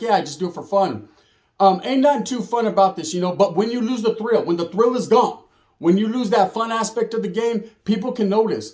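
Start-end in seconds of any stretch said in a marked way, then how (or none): 0.0-1.1 light touch of mock sarcasm. Retelling a past answer to a question: retelling own sarcastic remark. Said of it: "I was being a little sarcastic".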